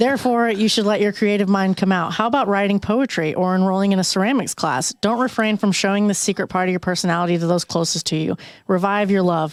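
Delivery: ordinary talk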